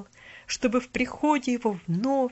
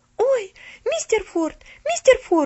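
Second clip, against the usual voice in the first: very high-pitched, frightened, scared shouting cry; 12 semitones higher, 7 dB louder than usual. In a read story, a woman comes upon the groaning pastor: frightened shout. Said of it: "испуганно закричала она".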